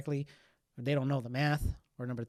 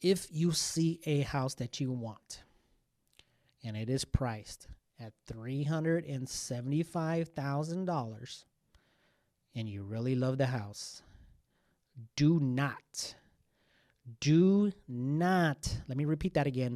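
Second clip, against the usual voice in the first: very slow, carefully enunciated, clear delivery. Advising house buyers on offers over asking price: speaking very slowly and clearly. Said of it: "explain this very slowly and very clearly".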